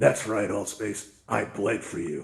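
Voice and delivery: put-on grand, over-the-top theatrical delivery. Telling an audience what they'd say with a raised fist, acting all dramatic. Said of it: "And I'd be all dramatic".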